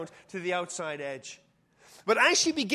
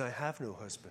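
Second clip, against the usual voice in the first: mock-ashamed mutter, quieter and lower; 10 semitones lower, 12 dB quieter than usual. Retelling the woman's reply to Jesus, acting out an ashamed mutter. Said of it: "she sort of muttered, because she's ashamed".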